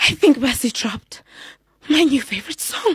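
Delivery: frightened, scared, fearful delivery. Acting out a set sentence for others to guess the emotion: acting scared. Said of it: "Was that scared?".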